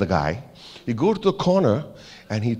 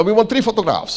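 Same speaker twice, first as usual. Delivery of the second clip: clumsy, very bad Norwegian accent, very high pitched; 10 semitones higher, 3 dB louder than usual. Retelling what a Norwegian guy at a swimming pool told him, in a very bad Norwegian accent. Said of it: "I'm doing a very bad accent".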